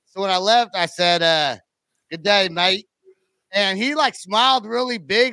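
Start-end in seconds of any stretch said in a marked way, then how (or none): 2.1-2.9 badly faked, put-on Australian accent. Retelling a goodbye to the dollar store guy from Australia: bad Australian accent. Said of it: "That was the shittest accent I've ever heard".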